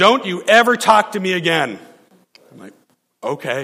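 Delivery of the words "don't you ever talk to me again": mock, shouted delivery. Retelling a woman's parting words as she leaves the church; retelling a yell. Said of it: "she's yelling".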